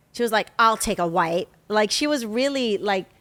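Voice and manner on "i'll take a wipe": mock grudging, put-out, pissy, snippy tone. Retelling a passenger's reply on a flight: imitating a pissy passenger. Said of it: "being pissy".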